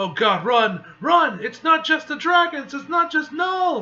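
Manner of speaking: high, loud, terrified shout.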